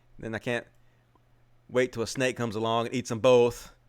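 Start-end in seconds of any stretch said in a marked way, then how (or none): none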